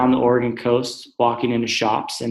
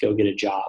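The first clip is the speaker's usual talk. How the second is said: put-on muttered whisper, lower pitch; 3 semitones lower, 3 dB quieter than usual. Retelling own past words about people on the street: imitating a whisper under the breath. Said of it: "whisper under my breath".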